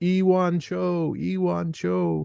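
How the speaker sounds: high-pitched, small creature voice calling out. Retelling how a man walking his dog hears a voice calling out, imitating a high-pitched voice. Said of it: "he hears this high-pitched voice saying".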